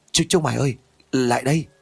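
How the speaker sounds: shaky, halting, trembling, broken voice. Suddenly weak and collapsing, a character calls the others over in a trembling, broken voice. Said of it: "giọng run rẩy phát ra tiếng nói đứt quãng".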